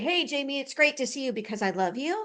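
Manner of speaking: big, strong, full-voiced delivery. Explaining charm by demonstrating an insincere greeting to Jamie, in a big strong voice. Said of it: "with my big, strong voice and say".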